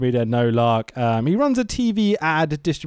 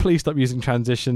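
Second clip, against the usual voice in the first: ordinary delivery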